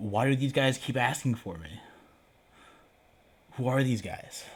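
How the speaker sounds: mock-panicked, acted-out panicky delivery. Describing what runs through a man's mind when probed, mock-panicked. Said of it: "sort of panicked".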